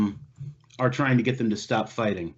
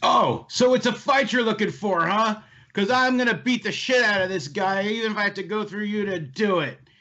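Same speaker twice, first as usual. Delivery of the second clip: very high-pitched, angry shouting yell; 9 semitones higher than usual. Narrator voicing a man spoiling for a fight with the players, shouting. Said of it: "As it escalates to the shouting".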